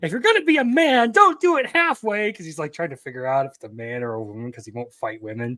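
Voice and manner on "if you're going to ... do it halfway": very high, loud dubbed anime-style shout. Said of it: "like, shouting".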